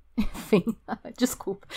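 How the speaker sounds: half-whispered, breathy, nervous laughing through words. Apologizing while telling an outrageous story, nervous laughing while talking. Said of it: "Eu tô rindo de nervoso".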